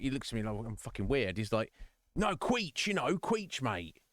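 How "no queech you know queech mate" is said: put-on sing-song, pitched-up old man voice. Retelling what an older gentleman said, acting him out in a mock geezer voice. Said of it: "I'm saying I'm acting like he's a geezer".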